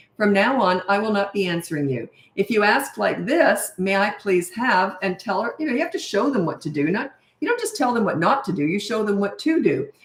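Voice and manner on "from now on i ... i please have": ordinary talk, nothing marked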